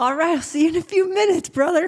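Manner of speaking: light southern twang, pitched very high. Retelling a talk with a neighbor who had people over: slight southern accent. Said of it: "we both have a slight, like, southern accent".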